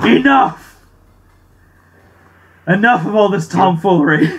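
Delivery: furious villain bellow, loud, very slow, drawn-out. Voicing a villain fed up with the players: angry villain shout.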